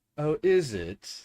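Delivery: unimpressed offhand tone. A character turns to reply to another's remark about her trick, nonplussed, unimpressed. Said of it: "very um non nonplussed about it".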